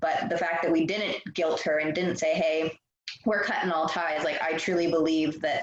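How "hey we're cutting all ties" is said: normal talking voice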